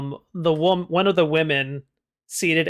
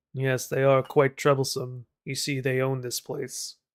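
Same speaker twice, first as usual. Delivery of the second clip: very quiet, hushed, conspiratorial murmur; 2 semitones lower, 4 dB quieter than usual. A storyteller voices a man leaning in to answer a question, speaking very quietly. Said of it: "and he says very quietly".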